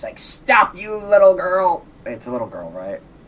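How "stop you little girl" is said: over-the-top anime character voice. A character screams out to everybody in his anime voice: Moss anime voice. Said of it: "Moss is just gonna scream out to everybody using his anime voice".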